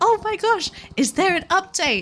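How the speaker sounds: high, loud excited gasp.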